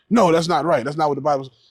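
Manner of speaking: ordinary talk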